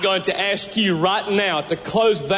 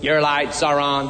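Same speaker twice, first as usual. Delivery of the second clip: small, robotic female automated voice; 5 semitones lower than usual. Speaker imitates what the car says to drivers, in a Toyota robot-woman voice. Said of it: "they got this little robot woman's voice in there that says".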